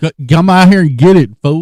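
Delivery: fast, loud, yelled mock delivery-driver voice.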